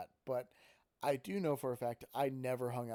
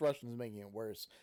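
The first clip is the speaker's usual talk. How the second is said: plain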